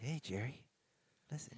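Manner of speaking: mock whisper. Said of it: "if you stop whispering at me".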